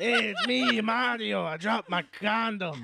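put-on gruff comic voice. Joking along about Danny DeVito as Mario voice. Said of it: "Danny DeVito would be a good one".

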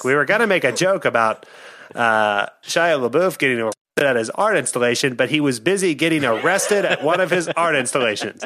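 old-timey comic bad-guy voice, thirties movie style. Quoting a comedian's awards show joke: John Mulaney impression. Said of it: "That's my new Mulaney I'm working on".

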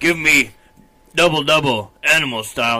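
put-on primitive caveman voice. Joking about ordering fast food like a caveman: put-on caveman voice. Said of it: "a caveman at the counter".

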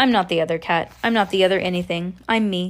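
plain

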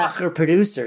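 normal talking voice

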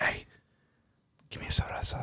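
hushed, soft, breathy whisper. Retelling how the grandfather asked the dad for a beer: imitating a whisper. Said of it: "whispered to my dad and was like".

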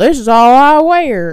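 very loud, very slow, thick Southern drawl. Retelling what a man answered when told he can't wear that: thick drawn-out Southern accent. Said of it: "really drawing out the thick Southern accent".

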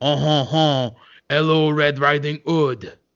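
put-on slow bear voice with a French accent. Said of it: "a bear that could only speak in a French accent".

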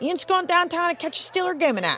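Pittsburgh accent voice. Presenter demonstrating how a Yinzer from Pittsburgh sounds, Pittsburgh accent. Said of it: "it sounds a little something like this".

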